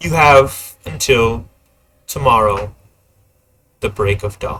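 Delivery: dark, threatening, foreboding tone. Narrating what a character tells the players before she leaves, ominous tone. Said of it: "she'll say in an uh, ominous tone".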